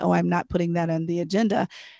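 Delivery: ordinary talk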